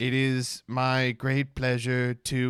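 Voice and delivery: stiff, very slow, word-by-word reading. Retelling how someone sounded reading off a prompter: imitating reading off a prompter. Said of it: "when he's reading off a prompter, he's like".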